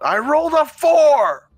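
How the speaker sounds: very high, shrill, drawn-out yell. Retelling a webcomic scene where Elan the bard yells during stealth: Elan yelling. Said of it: "he yells out".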